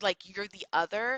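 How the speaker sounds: ordinary talk, nothing marked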